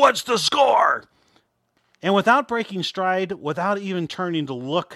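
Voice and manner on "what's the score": loud, high army drill sergeant shout. Retelling how the coach stepped out of the dugout and yelled, doing Coach Herbold's Army drill sergeant yell. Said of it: "yells in his legendary Army drill sergeant voice".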